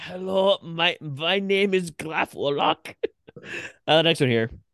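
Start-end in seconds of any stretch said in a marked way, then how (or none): 0.0-2.9 very slow, high, fake German accent. Redoing his self-introduction as a character, now in a put-on German accent. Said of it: "I could have gotten German".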